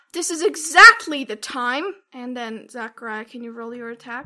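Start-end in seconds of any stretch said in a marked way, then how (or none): 0.2-1.9 furious yell at the very top of the lungs. A game master voices a wizard grabbing a player's wrist, angry. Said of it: "angry face and says".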